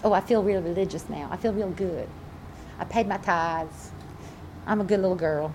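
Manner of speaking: put-on Southern accent. Mocking a type of religious person, in a Southern accent. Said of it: "I get my southern accent going on here".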